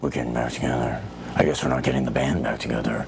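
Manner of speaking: very deep, strained, forced put-on low voice. Critiquing a movie, mocking the actor's Bruce Wayne lines, actor's attempted Batman voice. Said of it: "his attempted Batman voice".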